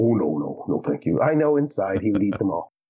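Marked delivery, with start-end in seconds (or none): 0.0-1.2 deep, dropped, put-on low voice. Retelling father politely refusing the aunt's cookies, imitating father's deep voice. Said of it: "He's got a deep voice".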